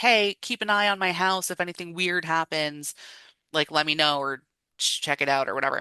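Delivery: ordinary delivery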